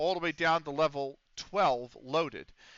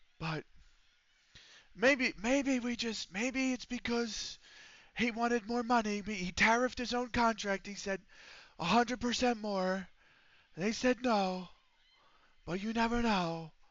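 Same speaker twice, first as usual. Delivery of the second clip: put-on, pitched-up, strained voice; 7 semitones higher than usual. Continuing in a put-on voice, the speaker uses a strained, constipated-sounding voice. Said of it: "it slightly sounds like I'm constipated when I use this voice".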